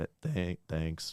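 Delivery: soft voice cracking on the words. Thanking someone after hearing about their last name, voice cracking. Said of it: "My voice cracked".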